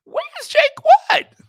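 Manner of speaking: shrill, very high, very loud outcry. Retelling own surprised reaction to a stranger: voice gone all high. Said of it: "My voice got all high".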